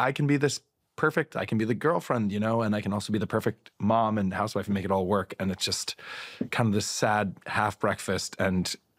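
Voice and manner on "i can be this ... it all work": ordinary talk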